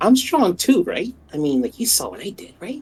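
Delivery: high, loud stage whisper said out loud. Voicing a character nudging another to ask praise: loud whisper. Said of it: "He kinda whispers, but he says it out loud".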